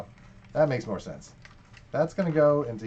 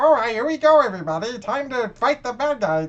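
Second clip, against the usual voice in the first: weird, goofy cartoon robot voice, pitched a bit higher; 8 semitones higher, 4 dB louder than usual. Watching Transformers and recalling the GoBot Scooter: Scooter's weird voice. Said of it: "He had that weird voice".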